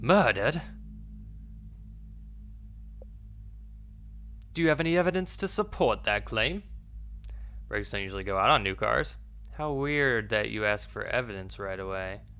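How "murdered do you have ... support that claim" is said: very bad, swooping, almost-British accent. Storyteller voices a male character questioning another in a scene, very terrible British accent. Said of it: "I'm gonna give him like an almost British accent, a very terrible one".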